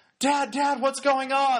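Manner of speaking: mock, really loud, high, carrying call. Retelling a TV scene, the speaker quotes a daughter calling to her dad, retelling a really loud call. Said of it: "Really loud".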